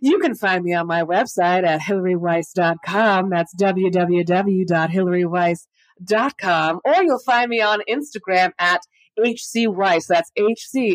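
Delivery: put-on radio broadcast announcer voice. Host plugging their website and Instagram: radio announcer voice. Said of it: "This is where I use my radio announcer voice".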